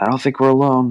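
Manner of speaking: calling out. Player character calling to others about thirty feet away, calling out, not full yell. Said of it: "I'm not yelling as loud as I can, but I'm like".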